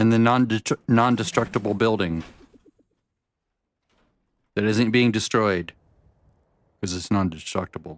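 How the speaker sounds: numb-mouthed speech. Talking with a mouth numb from eating ice: sounding drunk, mouth numb. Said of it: "I sound like I'm drunk".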